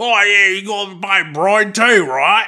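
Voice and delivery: high, loud, mashed South Carolina Australian drawl.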